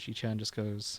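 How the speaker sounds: ordinary talk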